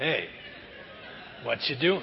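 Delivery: intimate, breathy, soft murmur, very close.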